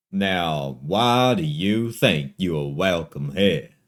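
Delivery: big, loud, resounding booming voice. A voice from inside the store addresses visitors walking in, booming voice. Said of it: "a booming voice echoes from within".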